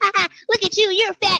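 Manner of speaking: put-on very high, childlike, taunting little-kid voice. Retelling a man who broke free and mocked the speaker: imitating a little kid's voice. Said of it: "his voice was like, like a little kid".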